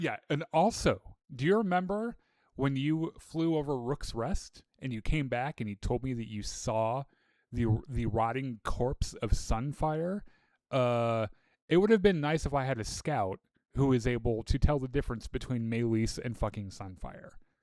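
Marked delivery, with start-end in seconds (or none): none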